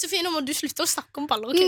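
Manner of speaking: normal talking voice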